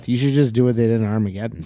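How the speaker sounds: ordinary talk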